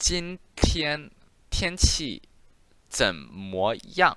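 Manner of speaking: very slow, spaced syllables. Showing learners the sentence before they repeat it: saying it really slowly. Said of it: "I'm going to say this really slowly".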